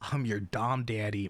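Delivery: mock deep, gruff male voice. Mocking how male VTubers want to sound: mocking a deep dom voice. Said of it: "they wanted to be like".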